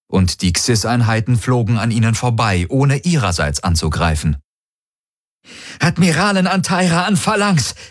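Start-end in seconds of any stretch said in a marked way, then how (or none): 5.8-7.7 high voice trembling and shaking with fury. An admiral hails the Phalanx as her ships stop firing; voice trembling with anger. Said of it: "Ihre Stimme zitterte vor Zorn".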